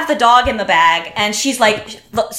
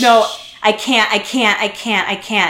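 slow, sad, miserable, upset voice. Retelling a friend refusing to press charges, imitating someone sad and upset. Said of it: "he's just like, um, so sad and so upset".

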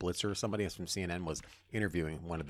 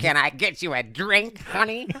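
very high, very loud, shrill troll voice; 12 semitones higher, 13 dB louder than usual. Saying a line another speaker asked for: Amy Klobuchar impression. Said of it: "That voice sounds like she should be living under a bridge".

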